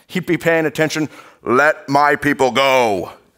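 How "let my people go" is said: loud, slow divine proclamation voice. Imagining God calling out to Pharaoh in a James Earl Jones voice. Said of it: "with his greatest James Earl Jones voice".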